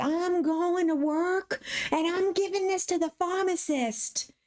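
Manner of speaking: very high, panicked, freaked-out screaming. Retelling how mom reacted to learning it was ecstasy: imitating mom screaming. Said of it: "she starts freaking out, screaming".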